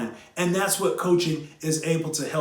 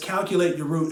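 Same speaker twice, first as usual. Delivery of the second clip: ordinary talk, nothing marked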